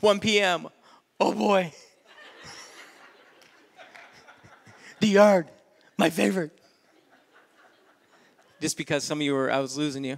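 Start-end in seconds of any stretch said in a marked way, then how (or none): 0.0-6.5 put-on voice of a dog. Listing a dog's day hour by hour: dog voice. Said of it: "I'm moving into my dog voice".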